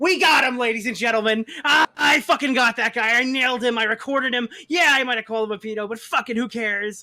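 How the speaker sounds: loud, triumphant, crowing, gloating brag. Retelling someone bragging on the next call, imitating John gloating. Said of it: "He's like".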